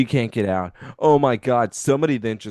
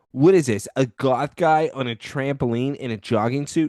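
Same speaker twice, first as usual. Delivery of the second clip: normal talking voice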